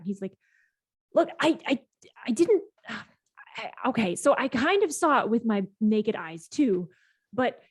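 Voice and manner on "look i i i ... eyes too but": agitated, flustered voice. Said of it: "He's so upset. He's like".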